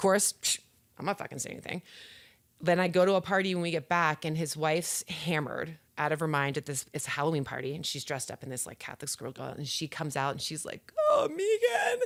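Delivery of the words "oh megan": very high-pitched, sobbing, bawling wail. Retelling a wife's plea at a Halloween party: imitating someone bawling.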